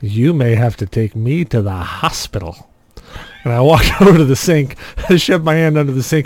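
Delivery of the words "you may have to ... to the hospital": put-on heavily drunk voice, slow with dragging words. Retelling bleeding at home when their wife opens the door, putting on a very drunk voice. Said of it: "in a very drunk voice".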